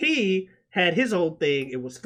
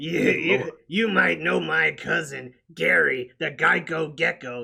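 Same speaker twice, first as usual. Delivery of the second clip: slow, creaky, stretched-out delivery. Retelling a video, doing the lizard character: Larry the Loser Lizard voice. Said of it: "first character was Larry the Loser Lizard".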